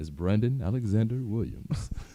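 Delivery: announcer-style voiceover delivery. Announcing a friend's new Instagram name: voiceover voice. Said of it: "in my, uh, voiceover voice".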